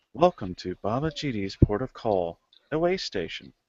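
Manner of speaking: automated droid voice, like a machine announcer. Voicing a port's automated greeting to arriving players: automated droid voice. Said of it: "greeted by an automated voice".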